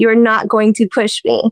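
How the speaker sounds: acted firm manner. Retelling how they warned off a persistent fan: imitating own firm warning. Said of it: "very firm and everything".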